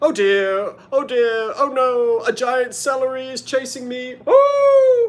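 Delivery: affected, very high voice, oh drawn out. Imitating Doctor Smith's very affected voice: affected Doctor Smith voice. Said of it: "his voice was very affected".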